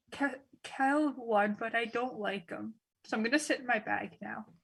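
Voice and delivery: soft, hushed half-whispered aside. Climbing onto Kestrel's shoulder, a character speaks to Kestrel, half-whispering. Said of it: "just whisper".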